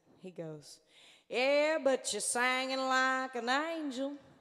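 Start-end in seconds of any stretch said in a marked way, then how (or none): 1.3-4.1 put-on thick Southern accent, slower and higher. On stage, retelling a guy in the back calling out, in a thick South Carolina accent. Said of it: "in a very thick South Carolina southern accent".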